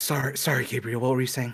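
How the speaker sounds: acted panting. Playing a character who just sprinted back: out of breath in character. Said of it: "they're, like, out of breath".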